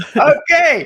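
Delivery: loud, high burst of helpless laughter.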